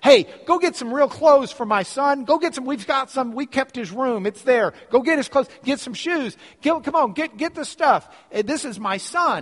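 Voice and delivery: high, loud shouting. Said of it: "He's turning around yelling to his workers".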